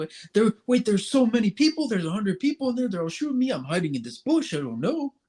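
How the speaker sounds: nervous, high-pitched. Imitating someone panicking in a Fortnite match: nervous Zach Lowe impression. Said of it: "that's how he talks".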